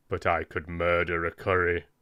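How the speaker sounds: super deadpan, no intonation. Reading Death's line aloud from the book: super deadpan, no intonation. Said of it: "super deadpan as well".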